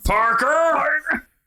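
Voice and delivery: put-on yelling editor voice. Doing the Spider-Man news guy character, J K Simmons newsroom yell. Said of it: "just the way he talks".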